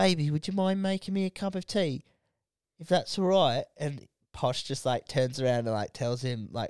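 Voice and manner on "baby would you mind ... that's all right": put-on geezer accent, pitched up, sweet-talking. Acting out a simping man from a documentary talking to Posh, put-on geezer accent. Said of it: "he's just got that geezer accent".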